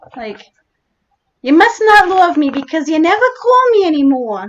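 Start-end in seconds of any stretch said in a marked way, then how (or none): 1.4-4.5 put-on, higher-pitched New York accent. Asked to do the accent, speaker gives an example line, new york accent. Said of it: "Are you referring to the New York accent?".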